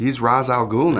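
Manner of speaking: ordinary delivery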